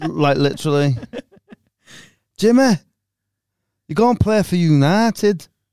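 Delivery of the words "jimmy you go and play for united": put-on Sheffield English accent. Repeating what someone's brother was saying, done in a Sheffield accent. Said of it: "Was that Sheffield accent?".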